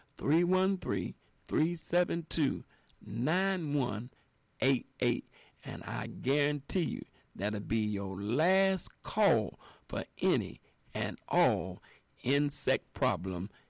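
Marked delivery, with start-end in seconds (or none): 0.2-5.3 slow, deliberate delivery, each digit drawn out. Repeating a sponsor's phone number for listeners, saying it slow. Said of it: "I'm going to say it slow".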